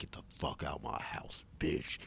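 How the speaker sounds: throaty, guttural whispered ghost growl, deep, breathy, menacing. Retelling a scary scene where he keeps getting closer, in a guttural deep voice. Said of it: "talking in this guttural, deep voice like".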